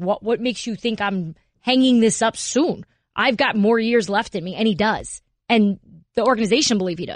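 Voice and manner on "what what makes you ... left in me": put-on defiant tone with attitude. Retelling a player's reply about retiring: imitating him with attitude. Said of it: "he gives you a little bit of attitude".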